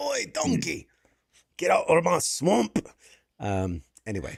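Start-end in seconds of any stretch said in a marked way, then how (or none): 0.0-2.8 laid-on, put-on Scottish accent, pitched up. Quoting a line during banter about a tv series, scottish accent. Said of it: "Scottish accent".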